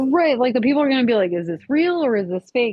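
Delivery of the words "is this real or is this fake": plain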